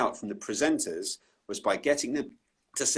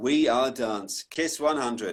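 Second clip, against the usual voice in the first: put-on disinterested, indifferent delivery. Retelling recording a tagline after being told to sound more disinterested, mock-disinterested delivery. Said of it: "no, sound more disinterested".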